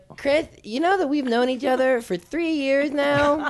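very high-pitched voice. Retelling a friend's words in the car, imitating a friend's voice. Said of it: "I'm gonna do an impression of, of your voice".

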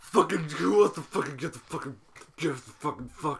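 put-on drunk, sozzled dad voice. Acting out an invented family's Christmas pickle hunt: drunk dad voice. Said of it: "a mother and a drunk dad".

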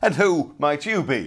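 loud, high, challenging, demanding tone. Narrating a tale, the Red Knight questions Fair Hands: demanding. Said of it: "demanded the Red Knight".

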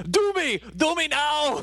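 mock yell, very high and stretched out. Speaker pictures the listener covered in mud and yelling: imitating someone yelling. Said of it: "and then just yelling".

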